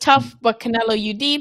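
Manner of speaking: normal talking voice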